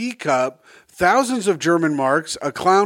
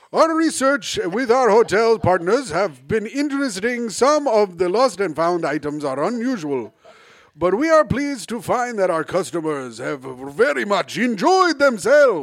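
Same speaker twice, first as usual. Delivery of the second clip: put-on Spanish TV news anchor voice; 2 semitones higher than usual. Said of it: "do it like a Telemundo, like, style".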